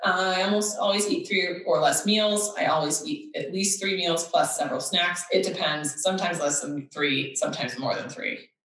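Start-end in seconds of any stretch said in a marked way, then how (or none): none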